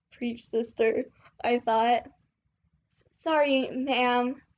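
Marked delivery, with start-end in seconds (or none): 3.2-4.3 nervous, anxious tone. Ryan apologizes to a woman who has just scolded him, nervously. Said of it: "Ryan said nervously".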